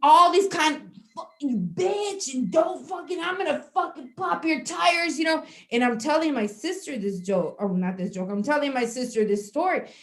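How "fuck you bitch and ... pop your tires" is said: pitched-up, angry, heated, furious rant. Retelling yelling back at a driver from a car window: retelling a furious outburst. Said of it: "I was so mad".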